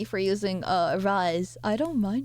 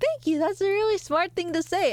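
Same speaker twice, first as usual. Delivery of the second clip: very high, sarcastic-sounding delivery; 10 semitones higher than usual. Thanking someone for a comment without meaning it as a backhand, sarcastic-sounding. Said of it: "That sounded really sarcastic".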